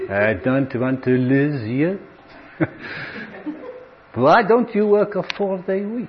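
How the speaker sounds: slow, put-on French accent.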